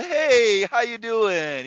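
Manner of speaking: very slow put-on polite work voice, high-pitched.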